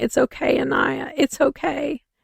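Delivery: mock crying under breath. Retelling a man who had to stand and watch, imitating crying under his breath. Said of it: "sitting there crying and under his breath going".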